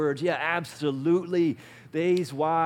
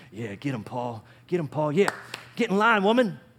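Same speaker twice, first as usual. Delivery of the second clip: put-on country accent. Acting out how the men reacted to the letter: redneck voice. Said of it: "I don't know why I do redneck voice".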